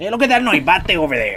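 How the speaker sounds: put-on Mexican accent. Demonstrating how they would talk, pointing out a bat, in a put-on Mexican accent. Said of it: "start talking with the Mexican accent".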